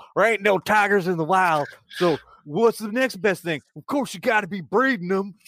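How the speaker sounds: put-on American hillbilly accent. Quoting one guy the speaker remembers; American hillbilly accent. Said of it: "I'm going to do my best American hillbilly accent".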